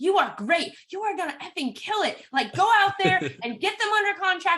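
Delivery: very high, screaming encouraging voice. Retelling a phone call to an insecure buyer's agent: retelling screaming encouragement. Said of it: "screaming it on, at him on the phone".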